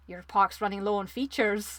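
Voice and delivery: put-on Scottish accent. Imitating the guy from the old theme park, Scottish accent impression. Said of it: "He was like a Scottish guy".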